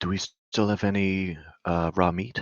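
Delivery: hushed voice. Asking the group quietly about raw meat near a sleeping bear: whispering. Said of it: "I don't have to whisper that much".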